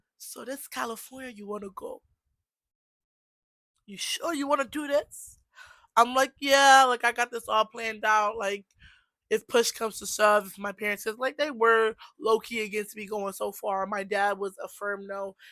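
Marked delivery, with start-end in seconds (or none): 0.2-5.4 put-on accent from Liberia. Quoting an aunt talking in the car, in a Liberian accent. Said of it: "I'm gonna say like my Liberian accent".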